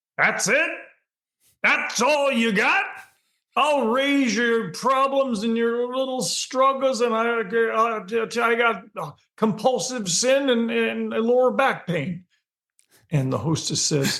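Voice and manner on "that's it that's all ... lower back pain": acted, very high-pitched shout from far back. Retelling a voice from the back of a room: imitating someone yelling. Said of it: "that voice from way back in the room that yells".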